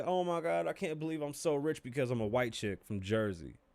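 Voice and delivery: weepy, tearful, sob-laden crying gush. Mocking how a rich woman talks about her success: imitating someone crying. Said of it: "she's gonna cry and say".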